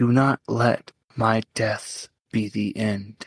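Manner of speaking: soft, gentle voice. The wounded god of order, fading from the plane, speaks; gentle voice. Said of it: "And the god of order, [name], fades from the plane, suffering from the wounds that he suffered from Tharizdun. ... You just hear a gentle voice".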